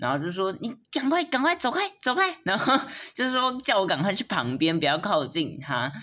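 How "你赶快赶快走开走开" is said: mock frightened, scared, very high, urgent voice. Retelling how someone urgently told the speaker to get away, imitating someone scared. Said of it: "表现出一个这么害怕的样子".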